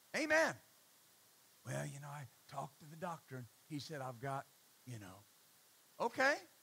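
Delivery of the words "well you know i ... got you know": very quiet, hushed half-whisper. Imitating people who talk about sickness: imitating someone half-whispering. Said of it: "talking about it in hushed tones".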